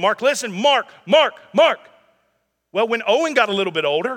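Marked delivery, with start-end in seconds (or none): 0.0-1.8 loud, raised voice, repeated calling. Retelling how he had to get loud repeatedly to get Mark's attention. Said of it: "me having to repeatedly kind of get loud".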